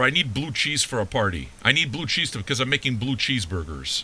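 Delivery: ordinary delivery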